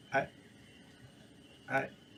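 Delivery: hushed, whispered, breathy stammering start. Asked by a passer-by about her morning, a character starts stammering. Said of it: "She kind of stammers".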